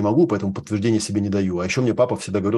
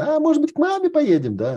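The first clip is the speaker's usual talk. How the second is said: very high, swooping, sing-song squeaky voice. Retelling a tv ad where the wife answers her husband, squeaky voice. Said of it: "жена писклявым голосом говорит".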